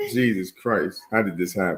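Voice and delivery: put-on sobbing, tearful crying disbelief. Retelling the reaction to news of another pregnancy: retelling own crying. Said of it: "She laughing and I'm crying like".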